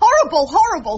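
loud outburst with rising pitch. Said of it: "Shh, not so loud".

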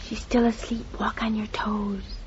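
hushed, quiet whisper. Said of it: "but shh".

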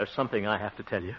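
soft, fast, serious tone. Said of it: "you sound so serious".

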